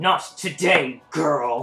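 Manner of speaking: snarled, menacing voice. Voicing a villain who resists a spell: snarling. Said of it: "he snarls and says".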